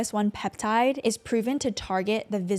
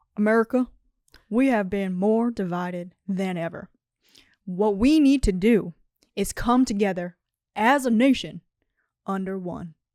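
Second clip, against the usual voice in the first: slow, deliberate, weighty speaking voice; 4 dB louder than usual. Doing an impression of Barack Obama for the others to judge: Barack Obama impression. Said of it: "This is my Obama impression".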